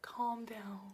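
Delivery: soft, hushed whisper under the breath.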